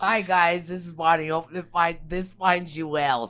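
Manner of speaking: very loud, high, giggly, laughing through words. Introducing herself to listeners, giggling while talking. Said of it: "I have the case of the giggles".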